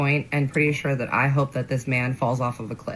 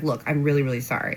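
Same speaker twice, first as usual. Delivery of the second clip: usual speaking voice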